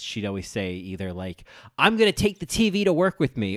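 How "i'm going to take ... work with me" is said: angry hollering, very high, shrill and loud. Retelling what mom said when really pissed: imitating mom yelling angrily. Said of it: "she'd be yelling".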